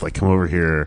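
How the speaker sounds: put-on muttering under the breath, hushed. Retelling how a man at a Halloween store called him over, imitating muttering under breath. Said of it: "like under his breath".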